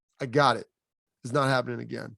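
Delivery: imitated flat deadpan delivery. Retelling a reply given back in the huddle: imitating a deadpan reply. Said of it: "he deadpans me".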